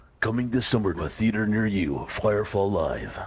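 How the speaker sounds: epic movie trailer announcer voiceover narration. Performing the requested line after being asked: movie trailer voice. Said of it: "can you please do the movie voice again".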